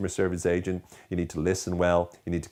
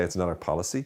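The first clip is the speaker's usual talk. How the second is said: normal talking voice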